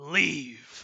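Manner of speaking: low, quiet snarl on a single word. The creature closest to the party orders them away, snarling. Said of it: "kind of snarls".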